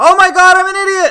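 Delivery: booming, loud, shrill yell, pitched very high. Speaker scolding themselves after a mistake from being out of practice: yelling. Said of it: "Sorry if I yelled too loud".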